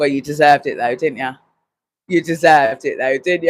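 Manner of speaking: play-acted calm, cool, classy and brisk tone. Retelling a man answering a woman who called his wife rude, retelling a calm reply. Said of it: "nice and calm, nice and cool".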